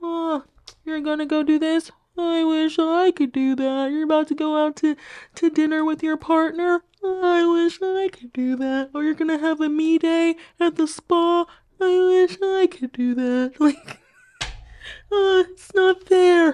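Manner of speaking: very high, whiny, lamenting voice. Speaker says a situation is giving Eeyore, doing an Eeyore voice. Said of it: "really giving like Eeyore".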